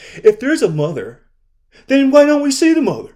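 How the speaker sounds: put-on very high, loud, ridiculing, doubting tone. Acting out a doubting twin in a parable, mocking a doubting twin. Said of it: "That's how y'all be sounding".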